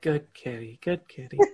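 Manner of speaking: soft, hushed, timid half-whisper. A player describing a character petting the cat Fern, half-whispering. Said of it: "you just hear her kind of whisper like".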